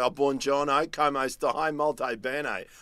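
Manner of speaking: slow Italian in a broad ocker Australian bogan accent. Showing how their own Italian sounds: Italian in a bogan accent. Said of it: "I just sound like a bogan".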